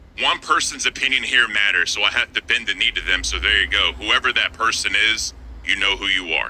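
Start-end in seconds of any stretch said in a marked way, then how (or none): none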